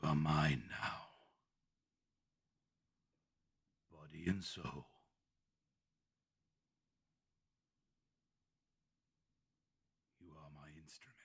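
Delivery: soft, very raspy, gravelly voice. Narrating a scene where a figure speaks, in a very raspy, gravelly voice. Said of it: "You hear a very raspy, gravelly voice".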